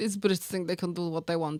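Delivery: bad, rough, put-on Russian accent. Picturing a politician mocking the british, bad russian accent. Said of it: "I know it's probably not a Russian accent".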